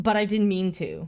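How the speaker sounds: plain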